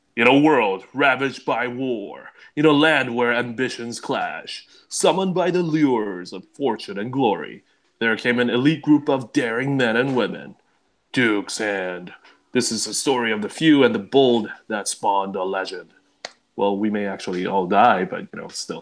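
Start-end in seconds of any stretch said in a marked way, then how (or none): 0.2-15.9 dramatic cinema trailer narrator delivery. Opening the session with a cinematic intro, speaker does the movie-theater guy voice. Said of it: "I'll do that movie uh, movie theater guy voice".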